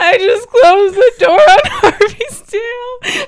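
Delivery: very high, very loud bawling sob. Retelling walking into her grandparents' house before family, retelling bawling. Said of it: "and I started bawling".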